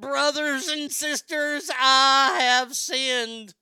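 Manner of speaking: mock very high, very loud weeping televangelist voice. Mocking a radio host who cried on air: imitating Jimmy Swaggart crying. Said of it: "he Jimmy Swaggered it".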